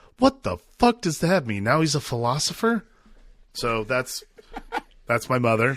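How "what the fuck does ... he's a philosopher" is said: disbelieving, bewildered, baffled outburst with swooping pitch. Retelling a parent's reaction to a movie line: imitating the speaker's mom, baffled. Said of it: "my mom twisted her face and goes".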